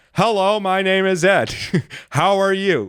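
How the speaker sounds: put-on very high, conspicuously loud, slow voice. Retelling introducing himself to a woman in an office, retelling talking oddly loud. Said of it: "Like really loud in the office".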